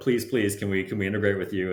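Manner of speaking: plain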